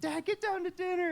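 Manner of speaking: very high-pitched yelling. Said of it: "now she's yelling".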